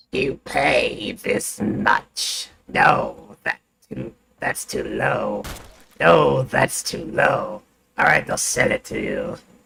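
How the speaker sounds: creaky, high-pitched, slow, drawn-out goblin voice. Reading a line aloud as instructed, slow high-pitched goblin voice. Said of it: "read this in high-pitched goblin voice slowly".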